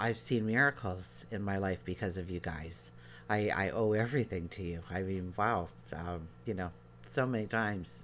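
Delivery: voice catching with emotion. Thanking listeners for their prayers and healing energy, getting choked up. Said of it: "I'm getting all choked up here".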